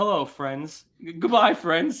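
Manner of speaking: put-on calm golf commentator voice. Imitating a guest's podcast sign-off: Jim Nantz voice. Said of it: "She sounds like she's, you know, Jim Nantz".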